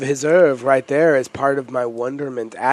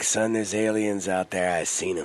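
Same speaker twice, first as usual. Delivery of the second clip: put-on old man voice, played straight; 5 semitones lower, 7 dB quieter than usual. Acting out an old man warning someone about aliens: imitating an old man. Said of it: "the old man who looks you in the eye and be like".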